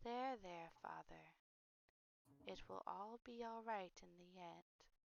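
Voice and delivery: faint, very quiet, hushed speaking voice. Game master voicing Hope, overheard comforting a sobbing father: Hope speaking very softly. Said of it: "you hear very softly uh".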